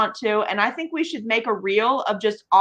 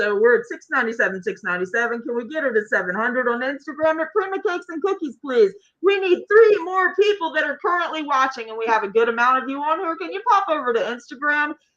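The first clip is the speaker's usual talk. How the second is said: auction-floor auctioneer calling voice; 4 semitones higher than usual. Urging people currently watching to follow on instagram, in auctioneer voice. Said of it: "Patricia needs the auctioneer voice".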